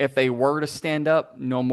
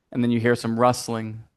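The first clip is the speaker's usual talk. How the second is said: ordinary delivery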